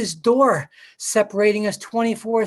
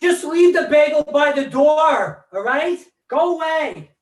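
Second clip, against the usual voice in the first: high shout with "door" drawn out; 5 semitones higher, 3 dB louder than usual. Speaker calls to his wife through a door, shouting. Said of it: "why I'm shouting at my wife to a door".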